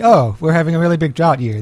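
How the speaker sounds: ordinary talk, nothing marked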